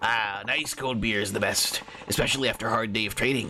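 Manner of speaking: goblin-like character voice. Voicing a character's lines, in a goblin-like voice. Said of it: "goblin-esque fucking Deus Ex Machina guy voice".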